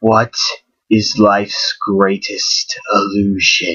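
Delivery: eerie, low, creepy haunted-door voice. Voicing a door that speaks to the approaching party, creepy talking-door voice. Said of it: "in a creepy voice".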